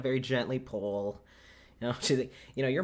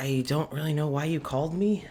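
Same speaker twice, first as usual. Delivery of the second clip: put-on whispered character voice; 2 semitones higher, 3 dB louder than usual. Retelling a scene where someone enters and she speaks, in Wallace's whispered voice. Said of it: "Wallace's kind of whispered voice".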